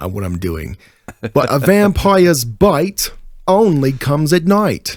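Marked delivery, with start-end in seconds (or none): 1.3-5.0 bad put-on British accent, much higher. Told to speak in a British accent from now on; a bad British accent. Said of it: "that's just the worst thing imaginable".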